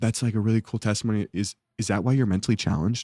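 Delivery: play-acted deadpan, low, totally earnest, dead-serious tone. Retelling what two students asked a youth speaker: imitating students saying it dead serious. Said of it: "Dead serious".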